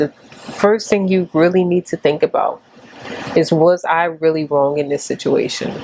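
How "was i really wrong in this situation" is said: usual speaking voice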